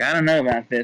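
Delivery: ordinary delivery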